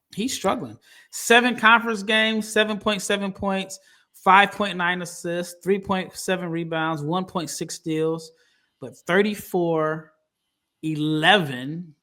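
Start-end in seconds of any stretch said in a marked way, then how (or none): 8.8-11.8 slow, deliberate, each part spelled out. Running through a struggling player's numbers, saying this part slowly. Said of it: "I had to say it slow".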